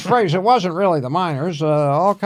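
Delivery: high scolding tone. Retelling how a fellow comic chewed him out: imitating Bruce Baum. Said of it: "that wasn't really his voice".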